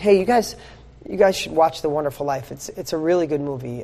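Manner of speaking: flat, deadpan, unenthused delivery. Showing how a movie recommendation sounds without passion, flat, no enthusiasm. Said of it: "No enthusiasm".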